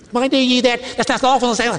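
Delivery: mock high, squeaky voice. Retelling a Sabbath story, voicing an onlooker by imitating a high, squeaky voice. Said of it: "in probably a very high, squeaky, irritating voice".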